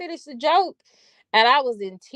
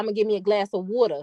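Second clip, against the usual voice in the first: put-on North Carolina pronunciation of "water", faster. Retelling how a man he knew in north carolina said water; imitating his speech.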